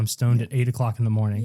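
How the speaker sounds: ordinary talk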